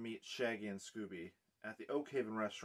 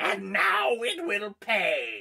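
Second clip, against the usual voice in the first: cackling, very high, very loud ghostly witch shriek; 11 semitones higher, 13 dB louder than usual. Reading a story aloud to listeners, the narrator voices the witch's ghost in a shrieking witch ghost voice. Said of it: "I gotta get into it".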